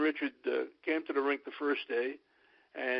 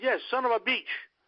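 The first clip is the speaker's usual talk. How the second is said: put-on, high-pitched Gaelic accent; 9 semitones higher, 4 dB louder than usual. Retelling what an injured player said from his hospital bed: imitating Jock's Gaelic accent. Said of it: "in his Gaelic accent, he said".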